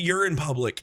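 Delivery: ordinary delivery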